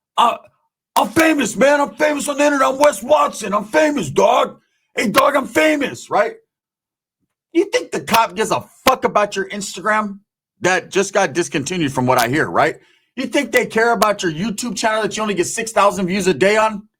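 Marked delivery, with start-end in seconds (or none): 0.2-6.1 high, loud, screaming, boastful, acted out. Retelling what a man screamed at police: imitating Wes Watson screaming. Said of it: "He screams".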